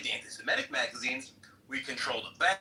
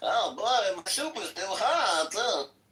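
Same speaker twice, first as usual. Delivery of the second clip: Yiddish-inflected accent; 6 semitones higher, 5 dB louder than usual.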